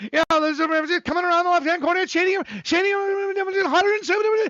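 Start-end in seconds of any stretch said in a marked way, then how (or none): 1.0-4.5 fast, pitched-up, nonstop horse-race announcer patter. Joking about how fast some people can talk: imitating fast horse-race announcer. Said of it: "or horse racing people".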